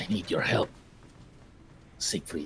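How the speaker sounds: low, soft, breathy whisper under the breath. Playing a character who whispers a plea for help: whispering. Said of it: "I'm gonna whisper a name".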